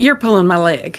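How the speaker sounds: put-on country accent. Voicing Jade as she doubts a name she just heard; Jade's country accent. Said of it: "I'm gonna give her a country accent".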